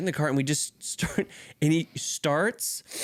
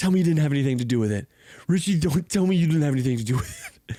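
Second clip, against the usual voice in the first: tearful crying voice, louder; 5 dB louder than usual. Retelling a person in a cart pleading while crying: imitating someone crying. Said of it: "he is crying".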